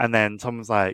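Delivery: ordinary delivery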